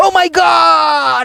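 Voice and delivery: high, slow, strained scream.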